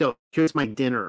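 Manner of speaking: normal talking voice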